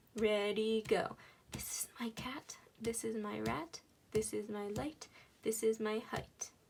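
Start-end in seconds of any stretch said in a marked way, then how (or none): 1.5-6.5 whispered, quieter. Leading learners through a rhyme for them to repeat: whispering. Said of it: "I'm gonna whisper and you follow along".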